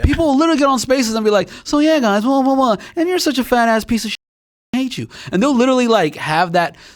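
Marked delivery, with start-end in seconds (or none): 1.6-5.1 breezy, casual, offhand chatter sliding into harsh cussing. Imitating people on Spaces insulting someone: imitating casual insults. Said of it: "so casually that you're thinking".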